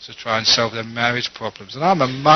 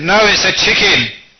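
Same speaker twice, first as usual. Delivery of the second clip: play-acted furious shout, raised and pitched up; 8 semitones higher, 6 dB louder than usual. Retelling a husband arguing with his wife: imitating an angry louder shout. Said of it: "raising his voice even louder and looking very angry".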